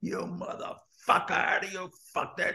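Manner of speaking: put-on whispered angry outburst, breathy, hushed. Retelling a story, acting out a man shouting at another guy in a corridor, imitating someone screaming. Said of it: "is screaming at this fucking guy".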